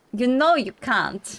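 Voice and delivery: put-on Russian accent. Voicing a character during a role-play game, in a Russian accent. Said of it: "give her a bit of a Russian accent".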